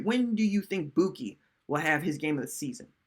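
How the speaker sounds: ordinary talk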